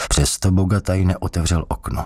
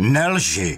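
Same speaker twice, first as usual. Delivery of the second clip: abrupt, sudden, unexpected outburst; 4 semitones higher than usual. An interrogator, calm until now, suddenly roars at the man he questions. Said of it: "Zařval nečekaně Bogataj".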